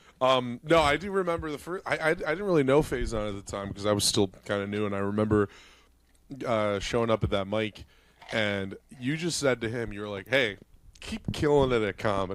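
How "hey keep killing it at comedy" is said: play-acted, tongue-in-cheek, sarcastic tone. Retelling what the other speaker once said at a mic: imitating a sarcastic remark. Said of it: "I could tell you were being sarcastic".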